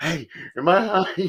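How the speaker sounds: high, very slow, hushed stage whisper. Acting out what they meant to half-whisper off camera: acting out a half-whisper. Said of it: "I was gonna whisper to you off camera".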